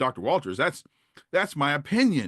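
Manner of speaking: very proud, puffed-up delivery. Retelling a classmate's reply to a professor: imitating a proud reply. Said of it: "very proudly".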